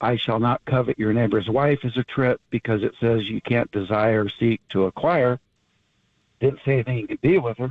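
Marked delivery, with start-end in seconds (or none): none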